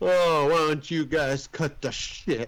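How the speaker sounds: wavering, wobbly voice throughout. Retelling a film scene where drunk Clarence confronts the cops: imitating Clarence's wavering voice. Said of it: "his voice was, like, really kinda waving in there".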